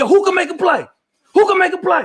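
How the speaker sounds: mock very high-pitched screamed call. Retelling rallying teammates in the huddle, imitating own past screaming. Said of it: "I start screaming like".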